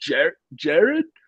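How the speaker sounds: put-on halting, uncertain-sounding Australian accent. Retelling someone calling out a name in a parking lot: australian accent. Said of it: "we hear this Australian voice".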